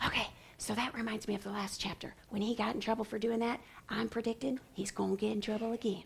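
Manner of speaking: very quiet, hushed, leaned-in half-whisper. Modelling thinking aloud while reading a chapter, leaning over and half-whispering. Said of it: "I lean over here and I whisper".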